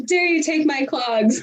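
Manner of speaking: high, accusing, squabbling yell. Joking about yelling at a sister over stolen clogs: mock yelling at a sister. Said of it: "You're yelling at your sister".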